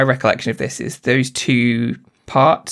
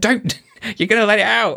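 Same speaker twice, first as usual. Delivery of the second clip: acted, very high near-shout; 9 semitones higher than usual. Retelling a film scene, recalling own words: imitating shouting at the tv. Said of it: "almost shouting at the T V".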